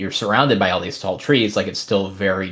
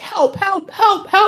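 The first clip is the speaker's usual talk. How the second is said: very high, loud put-on child's cries; 5 dB louder than usual. Narrating to the group, an unseen child calls out in the forest: child's voice crying for help. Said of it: "some kind of a child's voice just being like".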